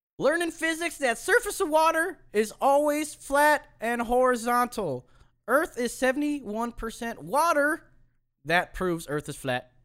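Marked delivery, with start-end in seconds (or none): 0.2-7.9 fake girlish voice, very high pitched. Speaker retries the reading after slipping into their real voice, put-on girl voice. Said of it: "I'm going to do a girl".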